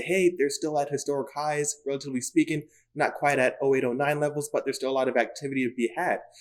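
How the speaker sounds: ordinary talk, nothing marked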